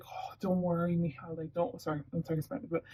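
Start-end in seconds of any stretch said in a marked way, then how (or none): 0.1-1.8 put-on soothing, consoling parent voice, quieter. Acting out a parent calming an anxious child: imitating a consoling parent. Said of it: "just trying consoling them like that".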